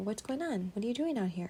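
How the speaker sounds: ordinary talk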